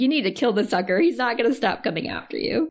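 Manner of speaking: normal talking voice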